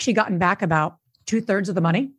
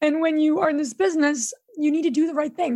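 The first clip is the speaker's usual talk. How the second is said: sad, emotional, earnest voice pitched up; 8 semitones higher than usual. Speaker explains a past business decision and admits getting emotional again: emotional. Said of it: "I don't know why I'm getting emotional again".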